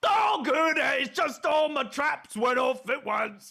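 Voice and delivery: put-on Australian accent. Impersonating the trapper in a game: Australian accent as Hunter. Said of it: "why do you have an Australian accent all of a sudden".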